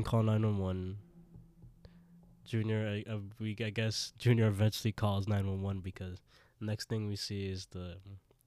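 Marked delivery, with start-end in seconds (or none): none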